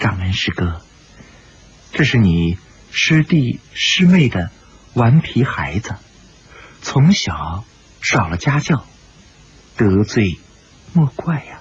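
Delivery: mild, gentle, tender voice. A character presents the child to the head of the sect, speaking softly. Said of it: "他柔声说道".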